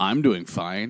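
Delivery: low, muttered aside. Retelling what a cashier said to the person beside her: imitating a mutter under breath. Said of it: "kind of under her breath".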